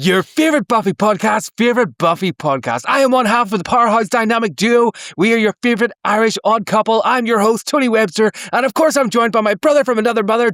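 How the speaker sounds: high-energy, pumped-up show host voice. Podcaster opens the episode the way other hosts do: high-energy intro like Eric and Ketrin. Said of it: "that's so much energy".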